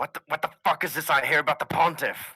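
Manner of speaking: frantic, fast, very loud panicked outburst. Voicing someone heard over a transmitter: panicked voice. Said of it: "then you hear a panicked voice say".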